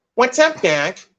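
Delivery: classic cartoon rabbit voice. Retelling what was said on the phone: Bugs Bunny voice. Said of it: "I gave her the Bugs Bunny voice".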